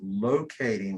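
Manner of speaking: the word locating stressed. A narrator explains a cable-locating procedure, stressing the word locating. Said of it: "you notice I emphasize the word locating".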